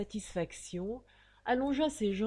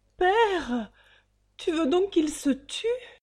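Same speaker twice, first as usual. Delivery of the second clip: very loud stammering outburst, quivering and trembling; 8 semitones higher, 9 dB louder than usual. A daughter pleads with her father over the ten thousand francs; stammering, trembling. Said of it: "Bégaya-t-elle, palpitante".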